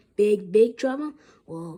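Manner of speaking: plain reading voice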